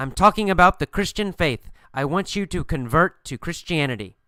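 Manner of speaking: plain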